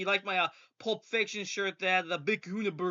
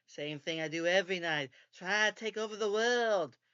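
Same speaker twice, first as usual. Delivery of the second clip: put-on cartoon mouse voice, slower. Retelling his answer to the speaker's question: the Brain voice. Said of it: "he says in his brain voice".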